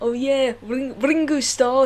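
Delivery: Scouse accent through the nose. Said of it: "you sort of talk a bit like this".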